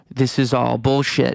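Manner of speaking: put-on angry, drunk voice. Retelling a drunk, furious outburst from the night: imitating an angry drunk dad. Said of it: "my dad being super angry and drunk, freaking out".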